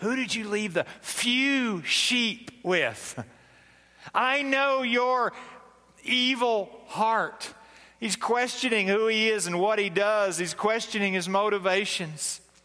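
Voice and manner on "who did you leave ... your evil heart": slow, acted, belittling sarcasm with few drawn out. Quoting an older brother putting David down: imitating a sarcastic tone. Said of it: "just the sarcasm in that".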